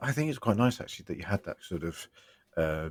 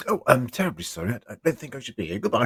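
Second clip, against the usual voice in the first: mock awkward, fumbling, bumbling, high voice; 6 semitones higher than usual. Retelling their own late arrival in the episode: imitating own bumbling entrance. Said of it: "I bumble out and go".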